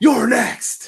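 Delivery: loud, high, bellowing wrestler voice. Reading a comment from the chat aloud: Goldberg voice. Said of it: "I said that in Goldberg voice".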